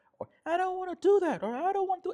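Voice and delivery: very high-pitched, loud, upset protesting voice. Speaker acts out how she answers when a boundary is set: high-pitched voice. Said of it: "she goes into this high pitched voice".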